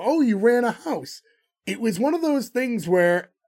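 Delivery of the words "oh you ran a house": mock, slow, drawn-out, heavy sarcasm. Retelling a character's reply to his bosses: imitating Roland, sarcastic. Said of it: "really sarcastic with them again".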